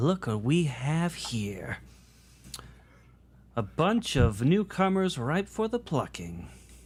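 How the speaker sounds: smug, slow, mocking, taunting gloat. A woman greets a group of newcomers, smirking. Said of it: "she's kind of smirking".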